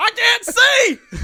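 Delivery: very high, very loud bellowed yell. Retelling being stuck face down in a rolling van: imitating own yell. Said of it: "I started yelling at everybody".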